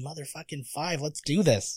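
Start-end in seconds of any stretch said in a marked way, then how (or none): 0.0-1.0 hushed whisper, quieter. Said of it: "Why'd you whisper?".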